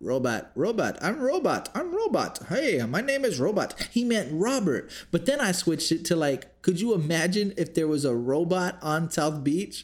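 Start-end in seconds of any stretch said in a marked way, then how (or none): 1.0-3.8 put-on Indian accent, higher pitch. Retelling how a man who couldn't say Robert kept saying robot: imitating an Indian man mispronouncing Robert. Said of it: "Robert was an Indian man that was trying to hack".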